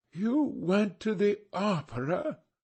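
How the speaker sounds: very slow, strained, pained, drawn-out. Reading a character's line in a novel, slow, strained and pained. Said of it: "speaking very slowly, and with a strained touch of pain in his voice".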